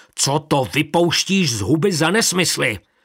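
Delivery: restrained roar. After sending the children out, a man leaps up and roars. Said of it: "opřel se dlaněmi o stůl a zařval".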